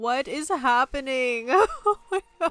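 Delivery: high, tearful speech through crying. Speaker reacting to a scene with Luca, crying while talking. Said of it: "this is so embarrassing how much I'm crying right now".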